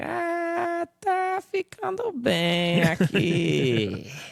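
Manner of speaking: slow whine with the "ah" stretched out. Doing a bit about northeastern Brazilians: imitating a slow whiny Nordeste accent. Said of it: "just kinda like".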